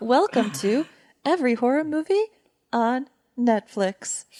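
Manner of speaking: synthetic, put-on AI virtual assistant voice. Pretending to be an AI that welcomes listeners: put-on AI voice. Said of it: "I'll pretend to be an A I voice".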